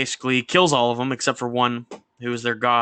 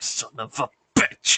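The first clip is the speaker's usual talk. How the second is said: mock muttering under breath. Retelling a comic scene where Thor curses: imitating muttering under breath. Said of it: "under his breath".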